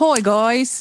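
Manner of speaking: put-on Australian accent. Showing the other speaker how the ghost should sound, in a Steve Irwin Australian accent. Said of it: "Do an Australian accent".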